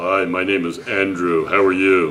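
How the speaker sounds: deep on-air announcer delivery. Introducing Andrew, the speaker imitates his deep radio announcer voice. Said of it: "He's a radio announcer. This is Andrew's talking".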